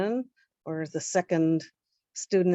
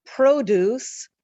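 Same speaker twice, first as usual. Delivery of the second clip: "produce" stressed on first syllable, PRO-duce; 6 semitones higher, 6 dB louder than usual. Explaining to Irma that stress can shift in one spelling, stress on PRO in produce. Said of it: "the stress is on a different part".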